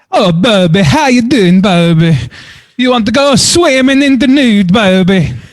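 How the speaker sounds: high put-on Italian accent drifting toward Swedish. Guest calling in and greeting the host, in an Italian accent. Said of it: "Is that your Italian accent?".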